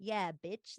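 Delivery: cocky hot-guy voice, put on. Describing how a film character changes at the reveal: imitating Chris's new voice. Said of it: "His voice is like".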